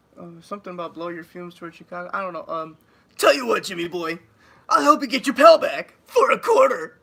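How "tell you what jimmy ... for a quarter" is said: high, booming, swooping sing-song cartoon voice. Asked to do the Eddie voice, saying one of his lines: Eddie voice. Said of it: "can you do your Eddie voice?".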